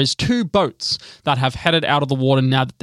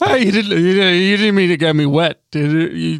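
put-on drunk tipsy captain voice, higher and louder; 4 semitones higher, 4 dB louder than usual. Storyteller voicing the captain after an ice ball soaks him, in a drunk captain voice. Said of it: "he's tanked, which is good because he's a functioning alcoholic".

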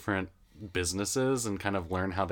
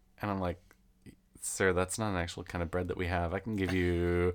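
ordinary talk

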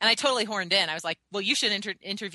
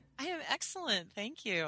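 high, laughing while talking; 5 semitones higher, 8 dB quieter than usual. Answering the greeting at the start of an interview, laughing while talking. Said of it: "I'm still laughing".

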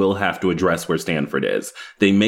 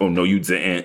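put-on sassy voice. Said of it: "inappropriate voice that she does occasionally with him".

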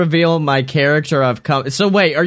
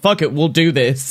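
ordinary talk

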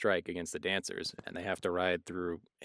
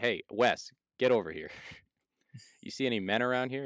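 mock angry, pissed-off, annoyed woman's voice; 4 semitones higher than usual. Retelling what a woman packing hay said: imitating an angry woman. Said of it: "She's pissed that she has to pack hay".

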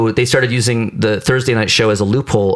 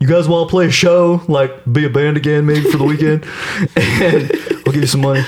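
high, breezy, casual phone voice; 6 semitones higher than usual. Imitating a booker calling a band member to offer a show: Glenn impression. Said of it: "that's my Glenn impression".

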